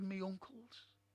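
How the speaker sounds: ordinary talk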